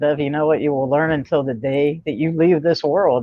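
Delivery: normal talking voice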